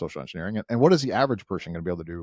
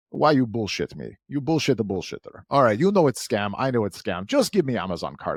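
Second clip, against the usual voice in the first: put-on fed-up, frustrated rant in broken English, Russian accent; 3 semitones higher than usual. Retelling a phone call with a scammer: imitating a frustrated russian scammer. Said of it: "the guy got very frustrated".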